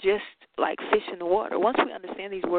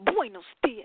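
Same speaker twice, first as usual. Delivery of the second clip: with attitude, much higher; 2 semitones higher than usual. Speaker teaching a class the spanish good morning, saying it with attitude. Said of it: "Say it with attitude".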